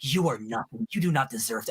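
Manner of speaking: put-on nasty whisper. Describing a movie scene where Miguel attacks a teenager, imitating Miguel's mean whisper. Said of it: "he's whispering the meanest".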